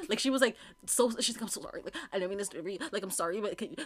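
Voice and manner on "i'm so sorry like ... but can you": put-on nervous, flustered stuttering stammer. Retelling how a stranger asked for help: imitating someone stuttering nervously. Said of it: "stuttering and, like, all over the place".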